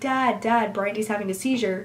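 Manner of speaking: ordinary talk, nothing marked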